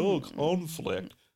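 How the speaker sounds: put-on British accent, laid on for effect. Denying he spoke a certain way, then mimicking it: mock British accent. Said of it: "talking in a British accent saying".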